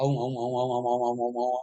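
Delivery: fast repeated om. Explaining how sounds join phonetically, demonstrating by saying om fast. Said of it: "Say the things fast".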